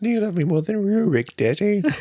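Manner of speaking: put-on eerie, very high, creepy child voice. Teasing the other speaker about miniatures, one puts on a creepy kid voice. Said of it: "Why do you use that voice?".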